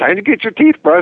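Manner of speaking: cheerful, high, happy pet-talk voice. Describing brushing their dog's teeth, in a happy little voice. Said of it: "our little voice ... our happy voice".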